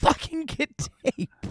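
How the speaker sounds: put-on light, held-back scream, a mild yell. Retelling a wrestler screaming at Fonzie for tape: imitating Sabu screaming. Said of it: "He's screaming at Fonzie".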